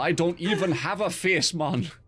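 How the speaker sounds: fake Geordie accent drifting toward a Jamaican accent. Quoting a Tomb Raider enemy brandishing a homemade trident, in a bad Geordie accent. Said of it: "In some kind of bad Geordie accent".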